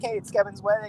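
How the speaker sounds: ordinary talk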